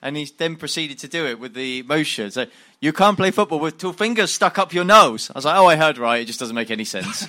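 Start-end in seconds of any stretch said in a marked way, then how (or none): 2.8-5.3 put-on thick Dutch accent, raised voice. Retelling what a man said to him, in the man's thick Dutch accent. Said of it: "he had quite a thick Dutch accent".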